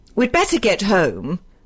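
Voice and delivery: chilly, icy, cold tone. Blanche remarks to the others, coldly. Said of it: "remarked Blanche coldly".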